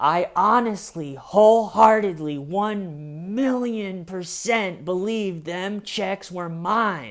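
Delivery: acted near-tearful voice, high and slow, "one" drawn out. Retelling a suspect's answer to detectives: imitating someone almost crying. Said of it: "James is almost crying".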